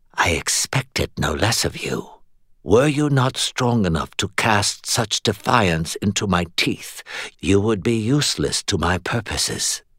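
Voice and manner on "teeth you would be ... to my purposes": ordinary delivery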